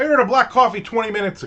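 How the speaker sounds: loud annoyed complaining tone. Retelling an exchange with a woman who just stares, retelling a loud complaint. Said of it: "and now I'm getting loud".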